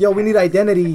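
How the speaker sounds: normal talking voice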